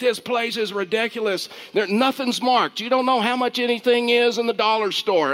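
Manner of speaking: loud, irate, angry rant, pitched high. Retelling a man behind them at the dollar store register: retelling an angry man's loud rant. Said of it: "he's talking loud, and he's getting angry".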